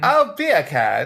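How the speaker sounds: put-on British accent. Answering the other speaker's request to speak in a British accent. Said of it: "say beer can in a British accent".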